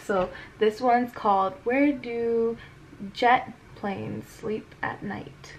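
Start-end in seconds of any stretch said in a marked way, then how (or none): 1.6-5.5 very slow, drawn-out, deliberate, soft read-aloud delivery. Reading a book's title aloud, reading very slowly. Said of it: "I read that really slow".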